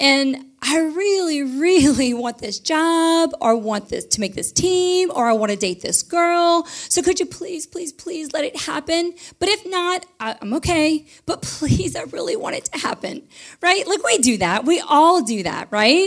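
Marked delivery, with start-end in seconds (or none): 0.0-13.3 mock begging, pleading tone, pitched higher. Imitating how people pray for an outcome they want: imitating a pleading prayer. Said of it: "really pushing and prodding him".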